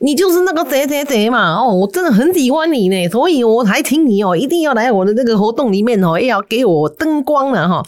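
high, thick-tongued lisping voice, heavily nasal. Retelling how an older guy greeted a senior colleague, imitating a lisp, heavy nasal. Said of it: "大舌头啊，然后又有一点鼻音很重".

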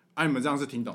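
ordinary delivery

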